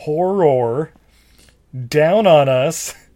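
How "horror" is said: horror stressed on second syllable, hor-ROR. Listing film titles, emphasizing a word in one: stress on syllable ror. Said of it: "I have to really emphasize the second syllable".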